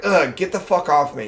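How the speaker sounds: mock freaked-out outburst voice. Retelling a James Bond scene, quoting her: imitating a freaked-out outburst. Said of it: "all freaked out".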